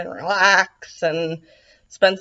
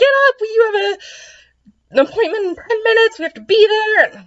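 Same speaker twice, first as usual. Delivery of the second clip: mock bursting excitement, very high pitch, rushed pace; 5 dB louder than usual. Retelling Jean bursting in to wake the speaker for an appointment: imitating Jean's super-happy excited voice. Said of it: "in like a super happy, excited voice".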